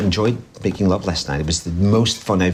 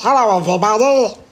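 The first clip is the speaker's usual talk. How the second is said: silly, very high, loud cartoon voice; 5 dB louder than usual. Speaker shows off the funny voices he can do, silly cartoon voice. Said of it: "I can do my silly cartoon voice".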